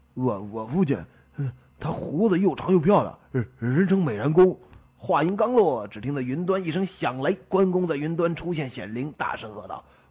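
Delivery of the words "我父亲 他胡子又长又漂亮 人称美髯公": stammering, higher and louder. Retelling a story, a son stammers when his turn comes to speak of his father. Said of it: "他结结巴巴地说".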